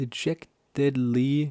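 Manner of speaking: slow, careful sounding out, syllable by syllable. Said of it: "what the fuck is that for a word?".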